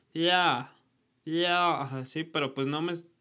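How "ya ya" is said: play-acted weak, garbled, strangled shout with tongue stuck. Retelling being stuck to a freezer, calling an aunt: imitating own yell with tongue stuck. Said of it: "Le estaba gritando a mi tía así como".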